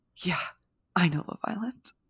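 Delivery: mock hurt, stricken, wounded tone. Retelling someone's reply about Love Island: imitating a stricken reply. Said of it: "looks, you know, like, stricken and goes".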